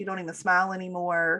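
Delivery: ordinary delivery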